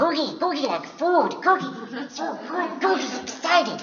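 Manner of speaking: very high, loud, squeaky creature voice. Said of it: "And he speaks like this".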